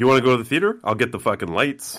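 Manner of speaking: mock super-confident tone. Retelling a friend's offer to handle the theater lights: imitating someone super confident. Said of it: "super confident".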